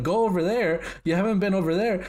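play-acted high-pitched screaming. Speaker retells their sister screaming at them while they were lost: mock screaming. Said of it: "My sister's screaming at me".

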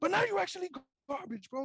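shrieking, very high-pitched screaming. Recalling screaming at friends while playing ball, the speaker is retelling a scream. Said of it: "screaming like".

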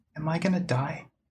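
put-on small, high voice of a young girl. A voice in a character's head asks a question, in a little girl's voice. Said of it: "It's a little girl's voice".

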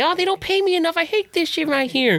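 very nasal, high-pitched cartoon voice. Retelling what a mall elf said at Christmas, in a nasally SpongeBob voice. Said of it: "he had a very nasally SpongeBob voice".

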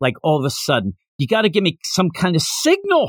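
ordinary talk, nothing marked

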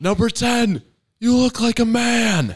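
very high, loud, drawn-out full-lungs yell. Retelling yelling at a rival team's best hitter in a gym: retelling a yell at full volume. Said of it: "at the top of my lungs".

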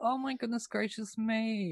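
sarcastic, high, fake sympathetic tone. Imagining watching society explode with popcorn: mock sympathy. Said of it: "A tiny violin".

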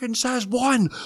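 mock, very high, shrill, all-out top-of-lungs screaming. Retelling screaming at the bus stop: imitating own past scream. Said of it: "screaming as loud as I can".

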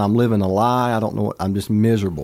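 ordinary talk

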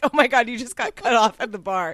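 mimicked laughing. Quoting what friends said to the speaker, retelling friends laughing. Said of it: "they all started laughing".

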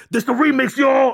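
high, screaming hype-man voice. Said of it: "in my [name] voice".

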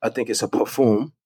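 "perfume" said lightly with a French pronunciation. Talking with the others about a product, with a little French accent. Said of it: "I'm trying to put a little French accent on it".

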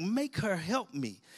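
play-acted, frustrated, exasperated, fed-up tone. Retelling a sermon story, voicing Martha: imitating a frustrated demand. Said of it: "she was so frustrated. She's like".

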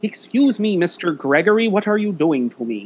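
high puppet voice. Describing a game monster that clings to you, voicing it in a Muppet voice. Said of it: "putting like a Muppet voice over".

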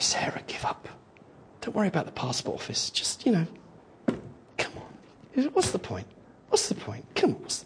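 hushed, soft, gentle whisper. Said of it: "Just the gentle whisper".

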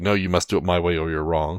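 ordinary delivery

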